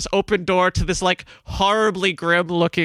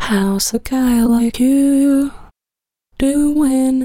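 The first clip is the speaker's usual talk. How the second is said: flirtatious voice, higher pitch and louder; 6 semitones higher, 5 dB louder than usual. Voicing a character hitting on a player character: flirty character voice. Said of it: "Is Greg getting hit on?".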